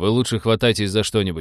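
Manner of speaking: usual speaking voice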